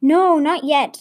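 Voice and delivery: nervously. Narrator reads Clemma answering Mally's question, nervously. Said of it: "Clemma said nervously".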